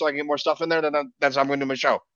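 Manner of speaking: talking really fast, rattled off.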